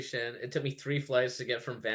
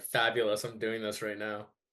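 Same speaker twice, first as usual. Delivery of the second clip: ordinary talk, nothing marked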